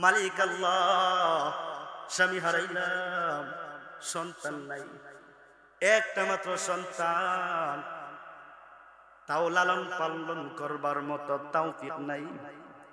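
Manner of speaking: weeping, lamenting voice.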